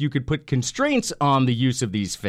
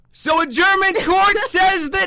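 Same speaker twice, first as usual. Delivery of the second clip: very high, loud, drawn-out yell; 6 dB louder than usual. Starting a news segment with lots of energy: Beverly impression, yelled with energy. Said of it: "That was my Beverly impression".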